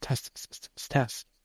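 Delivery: put-on whispering. Retelling Keith crawling toward Tess in the dark, retelling a whisper. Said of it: "He's whispering".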